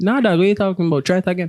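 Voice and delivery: ordinary talk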